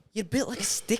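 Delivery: put-on Liverpool accent. Retelling what a man in the sauna said: put-on liverpool accent. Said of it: "You gotta do it with the accent too".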